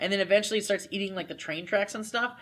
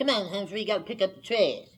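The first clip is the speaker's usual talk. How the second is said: vintage old cartoon character voice. Showing how a guy from old Disney cartoons talked: imitating an old Disney cartoon character. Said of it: "the guy who talked like this".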